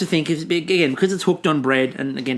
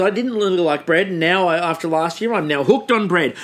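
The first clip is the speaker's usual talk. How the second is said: ordinary talk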